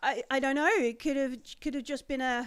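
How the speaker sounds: plain reading voice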